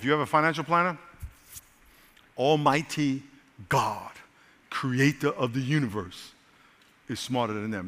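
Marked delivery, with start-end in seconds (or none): 2.4-7.9 slowed-down, deliberate delivery, each phrase laid out slowly. The speaker repeats a point to listeners, slower. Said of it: "Let me say it slower".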